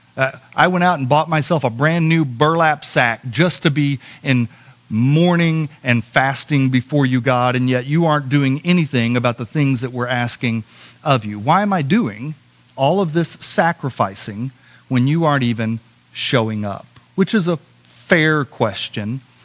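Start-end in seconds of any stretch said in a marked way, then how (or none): none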